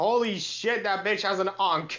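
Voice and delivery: half-voiced surprised exclamation, loud, caught off guard. Retelling own reaction while playing Duel Links: retelling a shout at top of lungs. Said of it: "I literally shouted at the top of my lungs".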